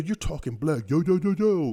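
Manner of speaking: high, jeering, mocking slangy voice. Retelling how people made fun of others' slang: imitating someone making fun. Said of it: "started making fun and being like".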